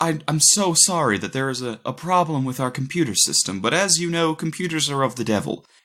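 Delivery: put-on gentle, light Southern accent. Imitating a professor apologizing about the computer system: imitating a soft southern accent. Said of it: "this soft Southern accent".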